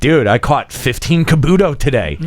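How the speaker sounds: normal talking voice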